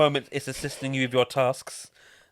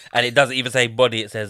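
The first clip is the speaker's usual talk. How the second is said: ordinary talk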